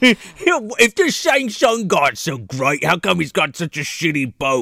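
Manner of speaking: cockney gangster villain voice. Quoting Kano's smack talk about Shang Tsung, in a Penguin from Arkham Knight voice. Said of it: "now you sound like Penguin from fucking Arkham Knight".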